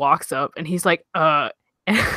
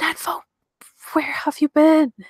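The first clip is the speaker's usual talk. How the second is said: whisper pitched very high; 9 semitones higher than usual. Voicing a sister who tackles someone: whispering in character. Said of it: "she's, like, whispering this".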